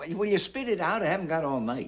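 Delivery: high-pitched shout. Telling someone who came down tonight to spit it out, shouting. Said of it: "don't shout".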